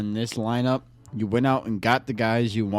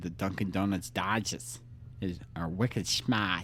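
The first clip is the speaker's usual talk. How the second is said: awful, clearly fake, put-on Boston accent; 4 semitones lower, 9 dB quieter than usual. Told he sounds like a boston jerk, showing a terrible boston accent. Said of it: "if I was trying to be a Boston asshole, I'd say".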